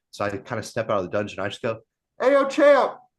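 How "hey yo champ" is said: very loud, high-pitched shout. Retelling calling out to get the champ's attention: retelling a shout as loud as possible. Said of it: "as loud as I could".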